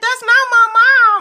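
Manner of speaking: put-on very high, loud, tearful sobbing through words. Recalling a childhood moment with a younger brother, reenacting bursting out crying. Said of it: "and I just started crying".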